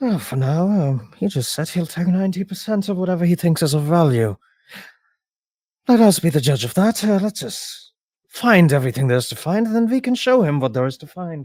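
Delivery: whispering. A game master voices a character leaning over to the players, whispering. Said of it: "whispers to you like".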